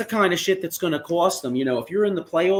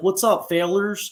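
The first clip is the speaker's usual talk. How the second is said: put-on southern twang accent, higher; 2 semitones higher than usual. Describing a guy from tennessee who calls up, the speaker imitates his southern twang accent. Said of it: "that southern accent, that southern twang".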